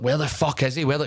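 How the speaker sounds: play-acted mild half-shout, held in. Retelling shouting behind the curtain when a wrestler missed his entrance: imitating own past shouting. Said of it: "I'm just shouting, like".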